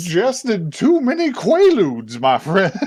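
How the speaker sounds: put-on Southern accent. Asked about someone's accent, the speaker attempts a Louisiana Deep South accent. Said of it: "attempt to do Louisiana's Deep South accent".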